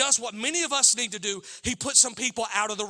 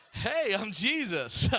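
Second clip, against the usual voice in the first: easygoing, chill hippie voice; 3 dB louder than usual. Speaker acts out how we picture Jesus as a hippie, in a hippie Jesus voice. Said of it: "That's hippie Jesus".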